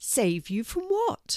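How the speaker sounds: surprised, taken-aback tone, high pitch. Questioning a mouse that has come up very close; surprised. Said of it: "surprised to see a mouse up so close".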